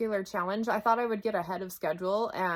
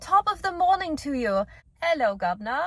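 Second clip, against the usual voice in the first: false, put-on British accent, pitched up; 7 semitones higher, 6 dB louder than usual. Describing a mentor character's audio voice, false British accent. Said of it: "the false British accent".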